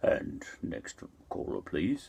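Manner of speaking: very low, deep rumbling voice. Retell how a man with a low voice took the next caller, imitating a low, low voice. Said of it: "He had a low, low voice".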